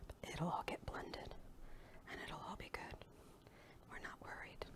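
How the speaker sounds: hushed, breathy, very quiet whisper. Pouring chocolatey milk in to be blended, talking to viewers: whispering. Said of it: "I don't know why I'm whispering".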